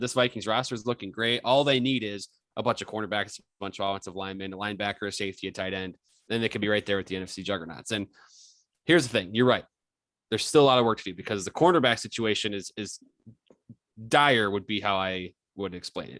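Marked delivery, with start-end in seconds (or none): none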